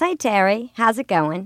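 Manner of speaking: put-on nasal voice, sounding older. Asked to demonstrate a woman's voice, the speaker imitates her: nasal, older-sounding voice. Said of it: "it's more nasal, and it also sounds older than your voice does".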